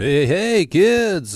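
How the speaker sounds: belted out, high-pitched and loud. Greeting kids at the start of a channel video: Krusty the Clown impression. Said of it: "that was my Krusty Clown, Krusty the Clown impression".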